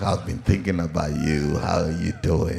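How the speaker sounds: very low, silky, big-voiced smooth charmer voice. Describing a smooth guy with a big voice, doing a smooth big-voiced guy impression. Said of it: "that's how you talk".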